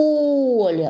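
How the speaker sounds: loud, high поле with stress on the О. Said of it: "Ещё раз".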